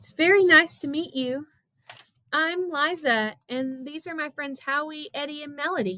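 quavering, unsteady, high, wavering voice. Liza introduces herself and her friends to the cousin: wavering voice. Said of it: "Liza spoke in a wavering voice".

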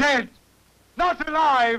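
high, loud, anguished shouting. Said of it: "And why are you shouting?".

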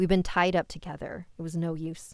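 ordinary delivery

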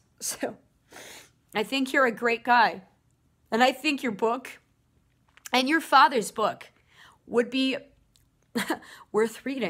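crying while talking. Responding to a viewer's story about how he was treated, crying while talking. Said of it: "and I'm crying because of that".

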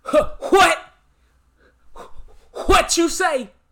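scratchy, slightly high-pitched voice. Reacting to a clip with a Steve Harvey impersonation. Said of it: "in my best Godfrey doing a Steve Harvey impersonation".

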